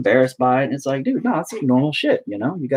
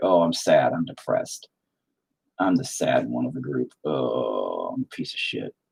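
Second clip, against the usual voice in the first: mock sad, soft, slow, droopy moan, long "oh"; 13 semitones lower, 6 dB quieter than usual. Voicing a painted figure who is looking down: voicing a sad painted figure. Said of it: "he's all looking down. He's, he's, he's like".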